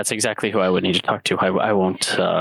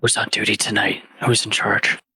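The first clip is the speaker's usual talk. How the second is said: voiced stage half-whisper, voice kept on; 2 semitones higher than usual. A player's character respectfully addresses the Acolyte, in a half-whispering tone. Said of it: "in a whispering tone".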